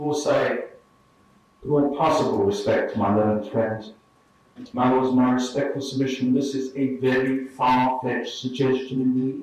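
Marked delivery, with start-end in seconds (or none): none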